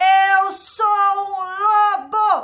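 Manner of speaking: huge, very loud bellow. Reading a story aloud, the wolf tries once more after the girl laughs: bellowing wolf. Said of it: "E ele berrou".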